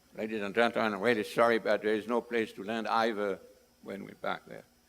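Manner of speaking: airline pilot cabin announcement intercom voice. Telling a story, the speaker voices the pilot addressing the passengers: airline pilot announcement voice. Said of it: "with the sort of voice of a pilot".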